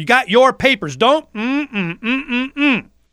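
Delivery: high-pitched, taunting, smug mock cop voice.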